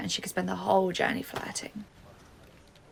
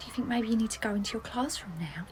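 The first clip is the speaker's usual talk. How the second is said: hushed whisper under the breath. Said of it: "why are you talking like that?".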